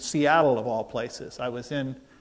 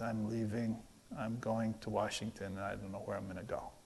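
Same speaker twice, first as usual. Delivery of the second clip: play-acted mournful, very quiet, sad murmur; 3 semitones lower, 13 dB quieter than usual. Retelling a phone call from someone just dumped, imitating a sad voice. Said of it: "just this sad, sad, sad voice".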